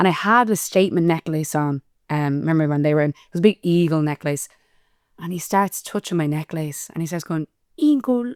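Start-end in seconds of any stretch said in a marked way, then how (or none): 7.8-8.3 put-on high-pitched babyish toddler-style baby voice. Retelling how a date touched her necklace, imitating a baby voice. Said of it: "doing a baby voice".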